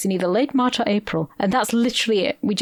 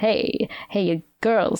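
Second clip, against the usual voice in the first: put-on nasal drawling voice. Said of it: "he speaks like [name]".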